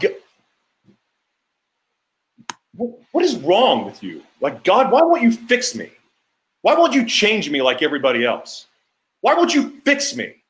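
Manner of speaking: mock very high, swooping, enraged screaming. Retelling a memory of being furious and screaming at god: retelling angry screaming at god. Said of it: "after just screaming at God".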